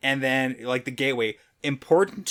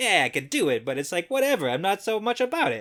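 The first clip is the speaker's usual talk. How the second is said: put-on high-pitched Jersey accent; 5 semitones higher than usual. Voicing Masana, who feels uncomfortable around Semirog, with a Jersey accent. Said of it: "She's got like a Jersey, maybe Boston accent".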